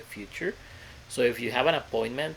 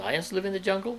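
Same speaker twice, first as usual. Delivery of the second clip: question-like rising pitch at the end of jungle; 8 semitones higher than usual. Showing a statement said with question intonation, rising question intonation. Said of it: "I just use the intonation of questions like".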